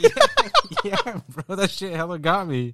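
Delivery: laughing so hard it's tearful, high and swooping. Reacting to the other speaker's bit that got them, crying with laughter. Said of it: "Why are you fucking crying?".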